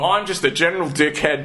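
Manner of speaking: ordinary talk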